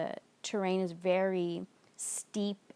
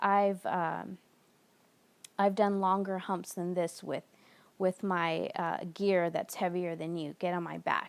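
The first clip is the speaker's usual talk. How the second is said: ordinary delivery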